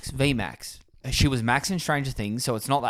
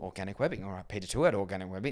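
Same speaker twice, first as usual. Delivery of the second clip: low, murmured, under-the-breath mutter; 5 semitones lower, 9 dB quieter than usual. Retelling what a character said in a film: imitating muttering under his breath. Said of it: "it was more of a under his breath".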